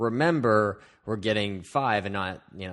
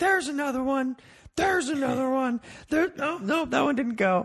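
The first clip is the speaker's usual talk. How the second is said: mock hyped, very high, very slow drawn-out call. Retelling how he called the game: imitating him getting really into it. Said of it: "he'd get really into it".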